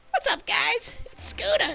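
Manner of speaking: very high, loud, creaky and rough voice. Showing how the Rudy voice echoes another character, greeting the audience in Scooter character voice. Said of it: "you hear a little bit of Scooter in my Rudy voice".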